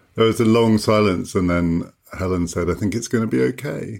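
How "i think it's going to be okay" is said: put-on slightly emotional tone, pitched higher. Retelling what was said after the final recording, imitating a slightly emotional tone. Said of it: "in a kind of slightly emotional tone of voice".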